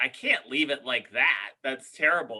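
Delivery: ordinary talk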